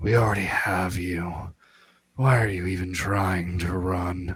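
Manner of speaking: menacing, intimidating whisper. Playing a character whispering into a captive's ear: intimidating whisper. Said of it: "whisper into his ear".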